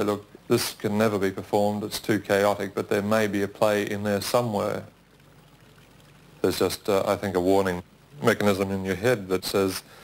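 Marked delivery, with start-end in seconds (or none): none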